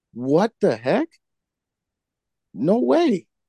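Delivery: high, stunned disbelief.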